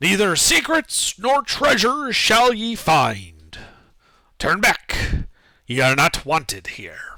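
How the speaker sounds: disembodied voice, mild yell, drawn-out "find". As Joey steps into the room, a voice yells out in Dwarvish, booming. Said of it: "there is a booming, disembodied voice that yells out in Dwarvish".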